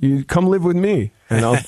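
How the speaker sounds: put-on high, teasing elderly voice. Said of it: "she actually made fun of me a little bit. Uh, she said".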